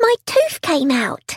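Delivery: high squeak, barely holding in excitement. A child answers a man who asked for her news, excited squeak. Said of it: "Megan squeaked, barely able to contain her excitement".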